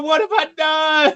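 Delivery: very high-pitched, shrill screaming shriek. Voicing May as she screams while they are being shot at: screaming. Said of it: "May is screaming".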